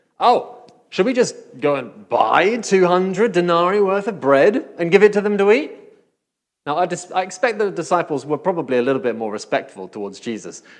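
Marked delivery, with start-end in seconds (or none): 0.2-5.7 snide, sarcastic, high-pitched tone. Reading the disciples' reply in verse thirty-seven as he hears it: mock-sarcastic question. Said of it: "it smacks of sarcasm, ... I hear it like this".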